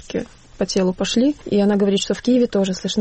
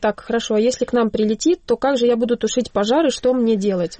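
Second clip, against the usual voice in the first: plain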